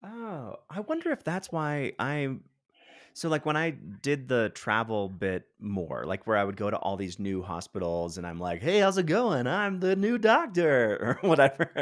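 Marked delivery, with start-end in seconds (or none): 8.6-11.2 put-on bright, higher radio-host voice. Retelling introducing oneself as the new doctor at new hospitals, in a funny put-on voice. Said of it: "why do you talk like that?".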